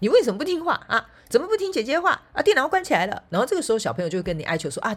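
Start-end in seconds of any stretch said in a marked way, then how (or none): 0.0-3.2 very high, shrill, raised motherly nagging voice. Retelling what she told the children, scolding like a mother nagging a child. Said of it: "就像妈妈念小孩一样哈".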